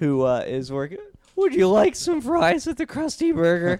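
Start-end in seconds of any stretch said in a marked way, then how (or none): 1.4-3.8 squeaky, high and loud. Imitating a teenager working at Krusty Burger: Squeaky Voiced Teen voice. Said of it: "I'm talking about the squeaky voice teen".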